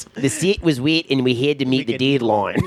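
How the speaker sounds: put-on New Zealand accent, question-like rise at line ends. Quoting a guy's line to show how he talks, in a New Zealand accent. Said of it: "New Zealand accent by this one guy".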